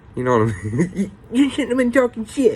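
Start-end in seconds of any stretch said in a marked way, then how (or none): 1.3-2.6 quick, squeaky high voice. Retelling how a man scolded him on the ground, in Mickey Mouse voice. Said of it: "he would say in his little Mickey Mouse voice".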